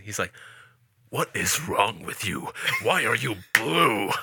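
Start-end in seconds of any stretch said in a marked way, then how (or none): 1.1-4.1 very slow, deliberate delivery. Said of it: "I can do a pretty good, uh, Walter when he's talking".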